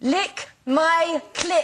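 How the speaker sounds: words bent into a put-on German accent. A speaker tries out a phrase for the others, in a German accent. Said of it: "Let's see if I can do it with a German accent".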